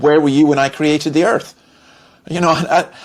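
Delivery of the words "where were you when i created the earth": normal talking voice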